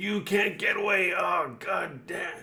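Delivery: very high, raging, furious screaming. Game master voicing a character as a Sahagin gets away: Axel screaming. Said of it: "He's screaming at the Sahagin that's getting away".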